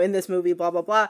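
ordinary delivery

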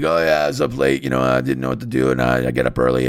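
rough, raspy, creaky voice like grinding sandpaper. Retelling what a brother said in the car: imitating brother's raspy voice. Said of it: "it's just like sandpaper on".

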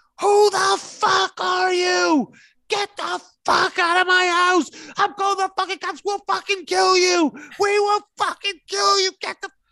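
acted, wild banshee screaming, very high, shrill and loud. Retelling how she screamed at someone in her house, imitating her screaming. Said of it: "She starts screaming".

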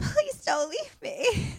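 play-acted, very high, sobbing six-year-old child voice. Retelling a scared six-year-old's plea, imitating a child crying. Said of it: "He's like crying and he's like".

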